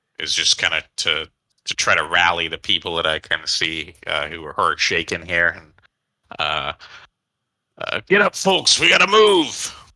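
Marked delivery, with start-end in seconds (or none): 8.1-9.7 very high, rallying, commanding captain voice. Player's character rallies hurt, shaken people, using a commanding captain voice. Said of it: "get out the old the old captain voice".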